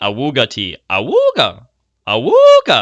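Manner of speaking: very slow, loud, swooping, drawn-out put-on man's voice. Unsure he can do it justice, the speaker tries imitating his voice. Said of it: "I don't know if I can do his voice justice".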